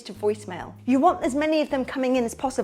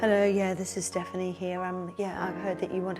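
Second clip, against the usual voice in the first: depressed voice, sounding like a depressed clown; 6 semitones lower, 5 dB quieter than usual. Example of how not to sound when answering the phone: depressed-sounding phone greeting. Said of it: "not like this. ... somebody who sounds depressed, a depressed clown".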